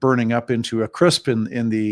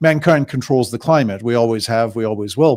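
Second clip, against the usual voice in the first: plain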